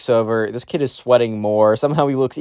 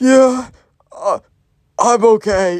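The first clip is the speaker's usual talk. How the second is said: mock very high, very slow, near-death voice; 11 semitones higher, 5 dB louder than usual. Retelling a sick kid's answer to a classmate: imitating someone sounding near death. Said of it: "said it in the most not okay way manner".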